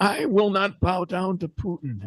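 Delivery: high-pitched cartoon old man voice. Telling your favorite part of his press conference, quote him in a Grandpa Simpson voice. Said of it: "in his best uh, Grandpa Simpson voice".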